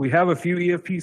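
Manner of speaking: high, loud blurt, accidentally too loud.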